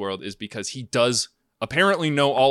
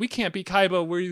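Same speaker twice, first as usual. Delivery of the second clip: put-on young boy voice, higher; 7 semitones higher than usual. Retelling a card game scene in a show, imitating baby Yugi. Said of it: "baby Yugi in his head, being like".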